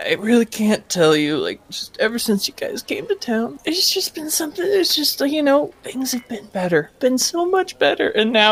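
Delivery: very high-pitched voice crying through the words. Voicing a grateful NPC named Tolbin who cries: crying while speaking. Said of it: "He cries".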